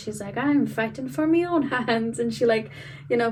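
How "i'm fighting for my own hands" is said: clumsy, bad little put-on Scottish accent. Retelling what she says after hitting the red spot, bad scottish accent. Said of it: "in her little Scottish accent ... really bad Scottish accent for me".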